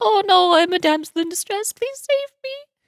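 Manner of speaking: mock pleading, helpless damsel-like tone. Mocking a character cowering in fear: mocking a damsel in distress. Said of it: "she's just standing here cowering in fear, like".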